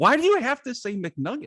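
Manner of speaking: play-acted very high, upset, swooping, all-over-the-place outburst. Retelling the wife's reaction to the order: imitating wife freaking out. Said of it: "she freaked out".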